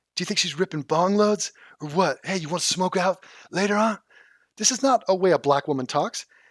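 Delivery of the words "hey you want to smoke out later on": rough voice with a little rasp. Mocking how a woman talks, imitating the little rasp in her voice. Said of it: "she talks with a little rasp in her voice".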